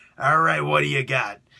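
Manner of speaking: loud, rough, commanding voice, barked out. Acting out a film studio meeting run by Vince McMahon: Vince McMahon voice. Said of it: "I'm gonna use my Vince McMahon voice".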